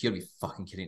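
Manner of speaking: low, very quiet muttering under the breath. Retelling cursing at a bar game: imitating muttering under breath. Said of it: "under my breath".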